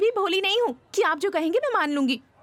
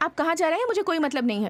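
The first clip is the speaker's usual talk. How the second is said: ordinary delivery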